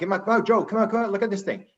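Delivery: mock hollered, high-pitched yell. Retelling a husband calling his wife to look at a UFO: imitating someone yelling. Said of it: "he yells out".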